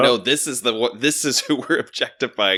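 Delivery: ordinary delivery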